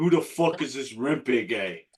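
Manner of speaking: put-on broad New York accent, laid on thick. Retelling what guys from New York asked at the game: imitating a thick New York accent.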